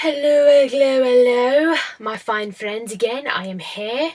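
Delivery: slow, unhurried, fake put-on English accent. Greeting friends on returning, the speaker talks in a put-on english accent. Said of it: "Don't know why I'm in this English accent all of a sudden".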